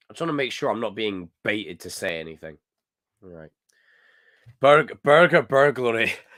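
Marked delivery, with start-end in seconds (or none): 4.6-6.2 put-on Scottish accent, loud and raised. Speaker trying out a requested phrase, scottish accent. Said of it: "Burger burglary in a Scottish accent".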